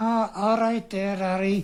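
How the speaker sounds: put-on Liverpool Scouse accent. Retelling meeting Steve, who moved up north, in Steve's Scouse accent. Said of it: "so assimilated a Scouse accent".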